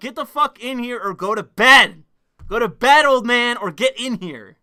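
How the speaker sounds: shouting. Speaker yells at someone still awake on Discord to join or sleep: yelling. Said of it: "I just shouted him out".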